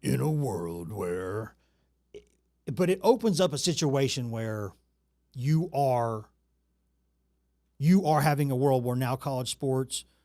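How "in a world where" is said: epic movie-trailer narrator voice, deep and slow. Discussing college sports, then mimicking a movie trailer opener; movie trailer guy voice. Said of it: "I sound like the movie trailer guy".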